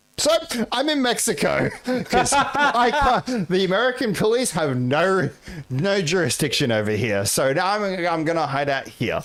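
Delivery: high-pitched, laughing, mocking, taunting voice.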